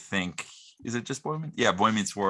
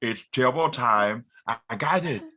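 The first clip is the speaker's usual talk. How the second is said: canned, recorded talking-toy voice box delivery; 2 semitones higher than usual. Repeating a talking doll's voice box line when asked: Turbo Man doll voice box. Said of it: "the realistic voice box says".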